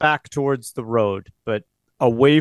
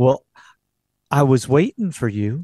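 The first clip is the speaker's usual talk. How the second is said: sweet southern woman's voice. A game narrator voices a woman speaking to the player, sweet southern woman's voice. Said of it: "you hear this sweet, southerly woman's voice say to you".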